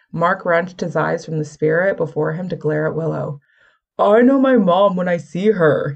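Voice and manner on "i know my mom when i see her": loud, scornful, sneering voice. Mark answers Willow's warning about the spirit, sneering. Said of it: "he sneered".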